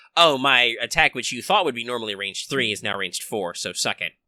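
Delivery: ordinary talk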